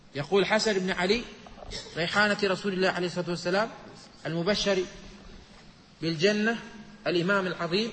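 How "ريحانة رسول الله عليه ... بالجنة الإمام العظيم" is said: ordinary talk, nothing marked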